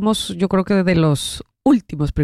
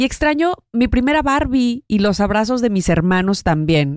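usual speaking voice

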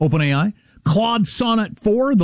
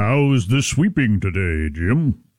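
very deep, low-pitched voice; 8 semitones lower than usual. Imitating Justice Thomas asking a custodian a question: Justice Thomas impression. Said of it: "He has very low voice".

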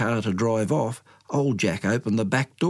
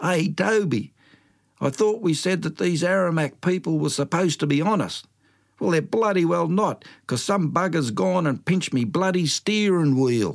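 raised, pitched-up voice, calling out; 7 semitones higher than usual. Telling a story, old Jack calls to Toby from the car: calling out. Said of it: "he called out".

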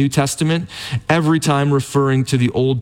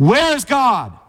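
even sterner, raised, very high-pitched voice; 10 semitones higher than usual. Retelling a preacher pressing a silent boy with a question, retelling the preacher's raised voice. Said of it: "the preacher raised his voice even more".

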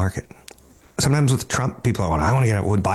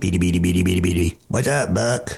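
put-on robot voice, lower; 4 semitones lower than usual. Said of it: "Tweaky would walk around going".

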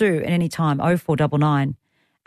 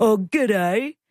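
mock teasing voice, higher pitch; 5 semitones higher than usual. Retelling how a sister teases the speaker's g'day: imitating sister mocking g'day. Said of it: "she'll take the mickey out of me".

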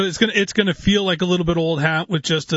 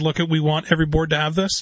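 plain

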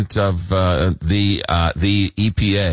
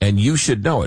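ordinary talk

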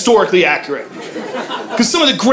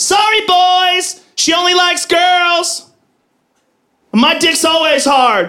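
mock drunken taunting shout, high, slow. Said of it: "she goes".

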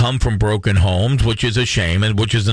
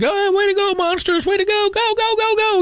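mock very high, drawn-out cheering scream. A dad retells cheering at his daughter's game, retelling his own screaming cheer. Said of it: "I'm screaming and yelling".

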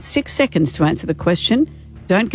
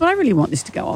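high, fast, needy pleading voice. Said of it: "now you're sounding too needy".

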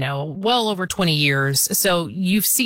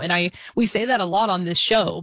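ordinary talk

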